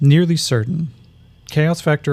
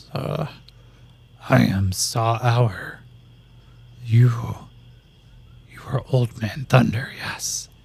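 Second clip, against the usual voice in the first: slow, drawn-out lizard creature voice; 3 semitones lower, 5 dB quieter than usual. Voicing the lizard man introducing himself: lizard man voice. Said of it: "the lizard man looks and goes".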